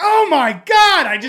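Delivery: very high, very loud, very slow excited gush. Retelling how a speaker reacts on stage: imitating Jennifer getting excited. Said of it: "She'll get so excited".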